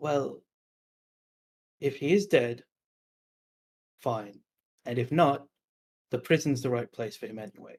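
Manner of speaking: rough, grating, gravelly raspy voice. Storyteller voicing a recognized voice from behind the grate, raspy, gravelly voice. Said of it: "the graspy, gravelly voice saying".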